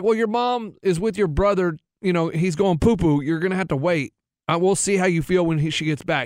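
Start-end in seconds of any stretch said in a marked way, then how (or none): none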